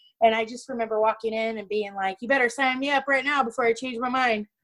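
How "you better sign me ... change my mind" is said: put-on, prickly, on-guard, defensive tone with attitude. Retelling walking into the gym afraid, imitating own defensive attitude. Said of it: "I was super defensive and had, like, an attitude".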